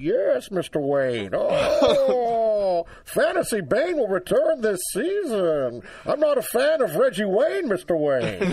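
slow, high comic villain voice. Answering a request for the Bane impression: Bane voice. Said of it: "I like your Bane impression better".

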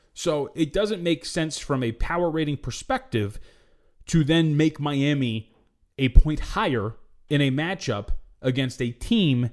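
slow, deliberate, measured speech.

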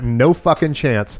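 put-on, somewhat sarcastic tone. Retelling how they answered the new neighbor who called them outside, kind of sarcastic. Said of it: "It's kind of sarcastically".

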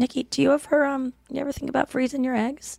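very quiet, hushed, discreet and careful. Retelling a mother's question asked while family was nearby: imitating mom speaking very quietly. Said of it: "very quietly".

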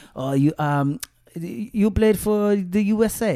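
put-on speaking with Serbian accent. Retelling what a player from Belgrade asked: imitating a Serbian accent. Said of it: "That's exactly how they sound".

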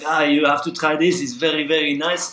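put-on a touch of Belgian French accent, friendly tone. Retelling a friend offering a seaweed: imitating a friend's belgian accent. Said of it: "so he got a bit of an accent".

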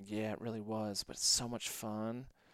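sweet, soft, cute southern drawl. Retelling a woman's answer when asked if it was scary: cute southern drawl. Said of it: "really cute southern drawl".

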